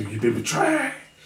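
deep, resounding voice echoing as from the depths. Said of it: "deep, resounding, beam, booming voice".

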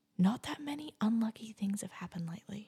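soft, secretive whisper under the breath. Telling a co-host something without wanting to jinx it, whispering. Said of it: "I'm gonna whisper it".

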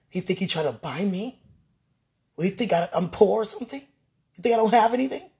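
indignant, offended comeback.

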